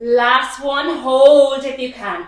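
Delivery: loud, straining, encouraging call-out.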